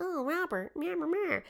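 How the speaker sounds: put-on very high, soft, babbling little-kid voice. Retelling how a boy talked to his doll in his toy room, Gene's childish young voice. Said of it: "he would say something in like a childish manner".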